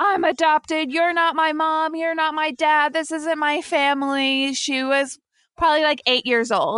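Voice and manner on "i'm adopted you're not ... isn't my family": high-pitched, screaming tantrum cry. Retelling a sister's full-blown tantrum, retelling a screaming tantrum. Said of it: "screaming like".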